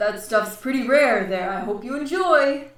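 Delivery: big, booming creature voice. A small squishy character serves the group their drinks: booming voice. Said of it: "It's this very like booming voice from this very squishy".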